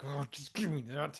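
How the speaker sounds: put-on irritated, annoyed, fed-up, had-enough tone. Retelling a funeral where someone grabs the bow: imitating a pissed-off guy. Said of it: "Some guy gets so pissed, he's like".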